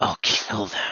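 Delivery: low, dropped-down voice. Directing another actor's line reading, demonstrating a lower voice. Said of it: "can you do like a lower voice".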